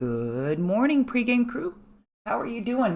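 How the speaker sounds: weak, unwell-sounding voice. Greeting the pregame crew at the start, voice not great this morning. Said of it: "My voice is not that great this morning".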